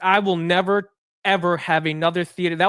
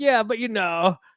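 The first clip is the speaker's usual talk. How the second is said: lukewarm, unconvinced, half-hearted reply; 3 semitones higher than usual. Retelling insisting to a friend a movie was good: imitating own unconvinced voice. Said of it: "he could hear it in my voice that I was just, like, not into it".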